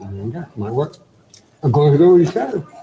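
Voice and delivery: muffled speech, talking with a full mouth. Tasting a chocolate and cheese pairing, talking with mouth full. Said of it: "I'm talking with my mouth full".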